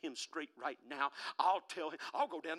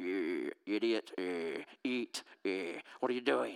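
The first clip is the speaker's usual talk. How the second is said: very low, slow, rumbling growl; 8 semitones lower, 4 dB louder than usual. Acting out a hungry stomach talking during a fast: growling stomach voice.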